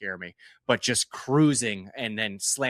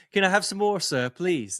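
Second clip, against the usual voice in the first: light British accent, pitched up; 8 semitones higher, 3 dB louder than usual. Joking about automation levels with an Oliver Twist British accent. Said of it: "A little bit of a British accent there for you".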